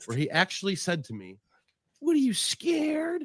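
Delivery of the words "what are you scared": voice pushed very high, put-on. Retelling what he actually said to the speaker, imitating him in a high voice. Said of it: "And the voice is getting higher somehow".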